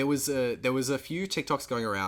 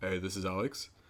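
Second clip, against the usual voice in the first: forced, put-on deep low voice; 4 semitones lower, 6 dB quieter than usual. Retelling answering the phone in front of a girlfriend, using a fake deep voice. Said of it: "my fake deep voice".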